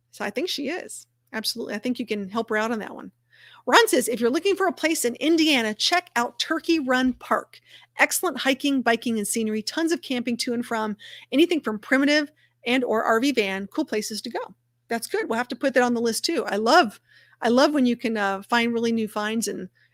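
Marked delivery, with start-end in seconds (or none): none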